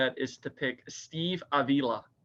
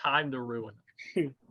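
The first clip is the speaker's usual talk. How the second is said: ordinary talk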